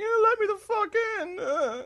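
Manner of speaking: very high, pleading, dog-like whimpering whine. Speaker retelling how their dog clawed at the car door, imitating a whimpering dog. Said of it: "like whimpering".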